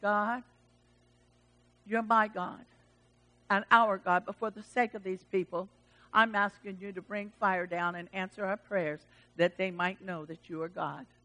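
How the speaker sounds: mock composed and calm delivery. Retelling Elijah praying over the water-soaked sacrifice, acting out Elijah's calm voice. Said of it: "in his calm voice".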